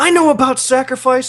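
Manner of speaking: put-on screaming. Retelling how a woman breaking down screams over a walkie-talkie, retelling a scream. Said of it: "screaming at him".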